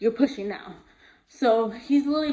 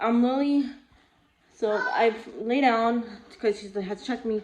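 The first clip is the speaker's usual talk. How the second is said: ordinary talk, nothing marked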